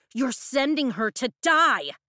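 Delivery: thundering, high-pitched shout. A familiar woman's voice thunders through the general's door: thundering shout. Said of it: "A familiar voice thunders".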